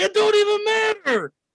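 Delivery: very high-pitched, yelled, dismissive tone. Retelling what Trav would say, imitating Trav yelling. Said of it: "Trav gonna say".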